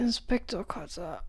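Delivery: raspy croak, barely managed, with effort. Narrator reading a man waking in bed before a coughing fit; croaked. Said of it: "bekam Peter krächzend zustande".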